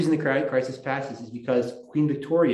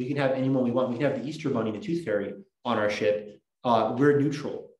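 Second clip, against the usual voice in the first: normal talking voice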